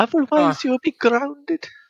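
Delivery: put-on strong Welsh accent. Doing a mother's voice during a joking bit, in a very welsh accent. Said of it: "That was very Welsh".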